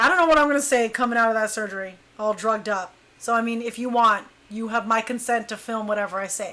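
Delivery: ordinary talk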